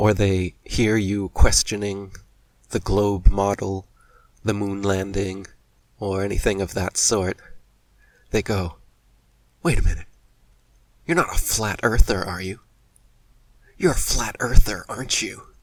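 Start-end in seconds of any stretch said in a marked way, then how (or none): 9.6-15.4 mock, fast, patronizing, condescending know-it-all tone. Imitating how people react when you question the globe, mock-condescending all-knowing tone. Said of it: "With this condescending, all-knowing tone".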